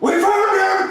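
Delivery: high, loud yell.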